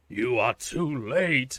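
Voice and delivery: very slow, loud, raspy voice. Reading a game's text aloud, a cult leader speaks: raspy voice. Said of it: "they say in a raspy voice".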